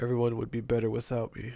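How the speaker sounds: normal talking voice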